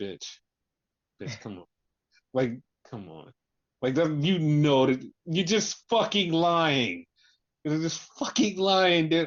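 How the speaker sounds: exasperated, infuriated, fed-up, rising in pitch. Retelling what they said to John on a call, mock-infuriated retort. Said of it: "it was so infuriating".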